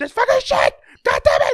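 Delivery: shrill, very high, very loud scream. Retelling a comedian's bit about snapping at little things: imitating someone screaming. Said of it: "He started screaming like".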